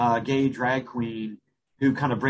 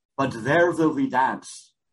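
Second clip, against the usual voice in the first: put-on German accent on every word. Retelling a man's line from a movie, in his german accent. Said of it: "with his German accent".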